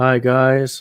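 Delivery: mock monotone, flat presenter voice. Speaker imitates a YouTuber in presentation mode; imitating a monotone presenter. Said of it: "he's the most monotonic guy on YouTube".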